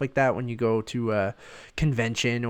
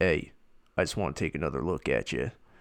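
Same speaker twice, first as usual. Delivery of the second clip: put-on raspy actor voice, lower pitched; 7 semitones lower than usual. Doing an impression to a co-host, a Bradley Cooper impersonation. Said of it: "that, uh, Bradley Cooper impersonation".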